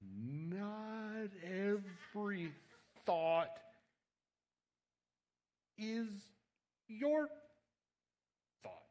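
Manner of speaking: very slow, deliberate, halting, with a drawn-out "not". Speaker repeats a point to the audience, said slowly. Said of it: "I'll say that again slowly".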